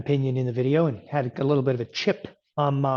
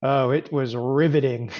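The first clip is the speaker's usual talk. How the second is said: plain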